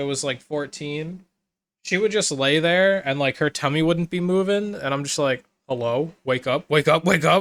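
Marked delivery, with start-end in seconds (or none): 5.7-7.4 anxious, urgent, worried calling out. Retelling trying to wake an old dog who lay still: imitating anxious waking. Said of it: "all that anxiety".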